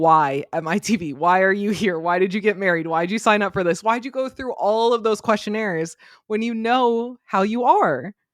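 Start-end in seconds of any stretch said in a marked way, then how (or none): none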